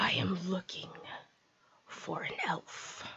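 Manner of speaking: breathy, guttural, hushed whisper of a monster. The narrator voices a speaking goose head addressing the players, in a guttural goose-head creature voice. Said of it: "it speaks to you in a guttural voice".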